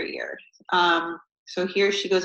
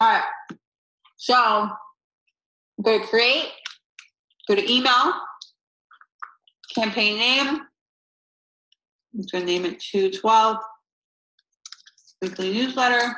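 talking with mouth full, pitched higher; 4 semitones higher than usual. Showing viewers how to set up a MailChimp campaign, talking with mouth full. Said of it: "I'm eating my beach bar".

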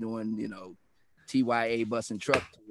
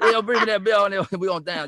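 put-on Cajun Louisiana accent, much higher and louder; 10 semitones higher, 10 dB louder than usual. Speaker imitates family at a reunion, in a Cajun Louisiana accent. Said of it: "they do hear kind of a Cajun or a Creole".

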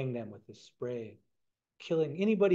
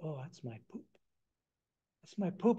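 put-on embarrassment, higher pitch; 3 semitones higher, 3 dB quieter than usual. Retelling a story, voicing a character caught out by the women: acting embarrassed. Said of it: "he gets kind of embarrassed".

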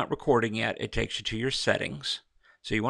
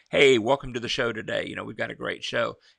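lively, full-of-energy show-host voice. Showing how they speak on their show, with more energy in the voice. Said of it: "like I speak on my show, ... I've got more energy in my voice".

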